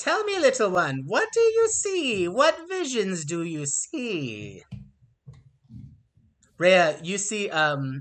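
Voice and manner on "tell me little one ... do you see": high, swooping, drawn-out harpy creature voice. Voicing a harpy who invites a player to drink: harpy voice. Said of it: "This one gets close to you, Ray, and says".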